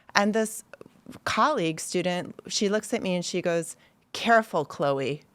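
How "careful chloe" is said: pointed, edgy, cautioning tone. Retelling a fellow student's warning during class: imitating an edge in her voice. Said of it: "this edge in her voice".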